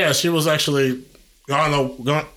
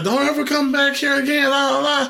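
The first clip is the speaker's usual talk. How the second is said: mock hollered shout; 12 semitones higher than usual. Retelling what a man yelled as you ran from the house, retelling his yell. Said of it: "he yelled".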